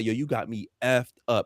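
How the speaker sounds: usual speaking voice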